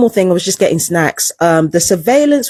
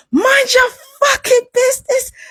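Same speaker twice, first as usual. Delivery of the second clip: put-on furious screaming, much higher pitch; 14 semitones higher than usual. Retelling an argument, repeating what they screamed at the person picking a fight: retelling a furious scream. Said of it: "I was literally screaming at them".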